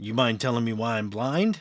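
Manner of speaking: raspy, hoarse, rasping voice. Voicing her as she questions the others, in a raspy voice. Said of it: "says in a in a still that kind of raspy voice".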